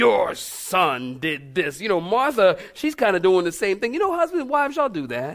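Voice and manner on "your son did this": very slow, scornful, disdainful drawl. Quoting how she always spoke when he did something bad, mimicking a disdainful tone. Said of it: "she would always say it with such disdain".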